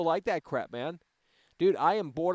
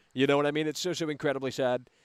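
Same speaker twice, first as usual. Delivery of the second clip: ordinary delivery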